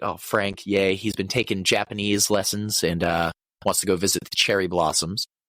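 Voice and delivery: plain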